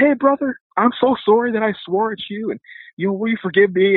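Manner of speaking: put-on merry, tipsy, happy drunk voice pitched very high. Retelling what a man said on coming back down the hall: imitating a happy drunk. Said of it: "This time he's happy drunk".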